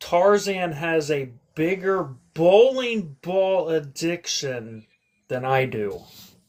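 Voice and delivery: slow, careful wording. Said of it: "I'm gonna say this carefully".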